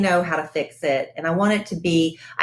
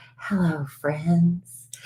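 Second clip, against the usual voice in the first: mock radio announcer voice, quieter; 5 dB quieter than usual. Recalling a tape of herself as a child doing a radio show, imitating a radio announcer. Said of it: "a cassette tape of me doing a radio show".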